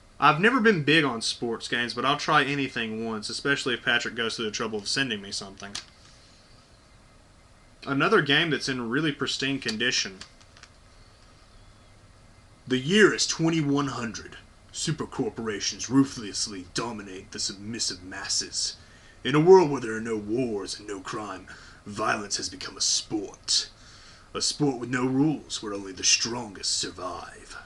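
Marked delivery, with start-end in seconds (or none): 12.7-27.6 low, dramatic movie trailer announcer voice. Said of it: "I decided to do that voice".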